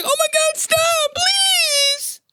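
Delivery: very high, slow, drawn-out sobbing. Telling about a fight, imitating the big guy crying. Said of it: "he was just crying. He was like".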